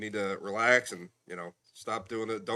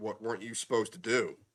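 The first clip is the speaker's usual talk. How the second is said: mock condescending tone, talking down. Retelling a doctor's questions after a repeat injury: imitating doctor talking down, as to a five-year-old. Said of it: "he talks to me like I'm a five-year-old".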